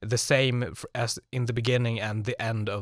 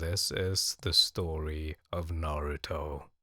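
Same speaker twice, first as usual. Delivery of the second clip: flat, unexcited, very low and slow voice; 7 semitones lower, 6 dB quieter than usual. Showing how they would sound talking about something that doesn't interest them, deadpan. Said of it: "We would sound deadpan. Like".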